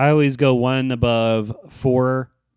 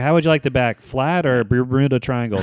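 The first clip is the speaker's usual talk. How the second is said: ordinary talk, nothing marked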